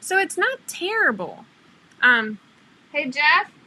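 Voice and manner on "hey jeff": loud calling-out voice. Calling out for husband while the video is frozen: yelling for someone. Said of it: "I'm yelling for my husband".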